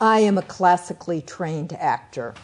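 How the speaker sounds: ordinary talk, nothing marked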